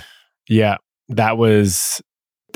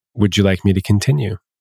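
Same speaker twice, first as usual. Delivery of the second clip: put-on whisper. Retelling leaning in close to a client: imitating own whisper. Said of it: "and I would whisper".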